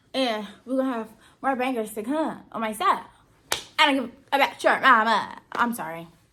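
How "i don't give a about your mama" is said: loud, rough, hyped-up, energetic delivery. Ending a story time video, suddenly talking really hype and trash-talking. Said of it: "I just been really hype".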